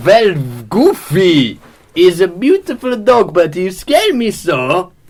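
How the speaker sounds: put-on German accent. Continuing the group scene as asked, speaking in a german accent. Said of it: "Now continue this with German accents".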